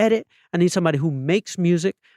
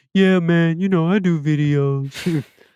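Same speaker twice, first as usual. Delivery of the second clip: put-on dude voice, much slower. Speaker quotes a man who does videos, met for work; imitating a dude's talk. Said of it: "this dude talked like a dude".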